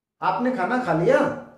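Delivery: rising, question-like tune on the word लिया. Hindi lesson showing how to mark a sentence as a question, question intonation. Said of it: "ये जताने के लिए हमें सुराघात का प्रयोग करना होगा।".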